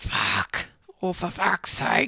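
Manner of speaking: clenched-teeth delivery. Speaker demonstrates how he swears in the studio, through gritted teeth. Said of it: "through gritted teeth".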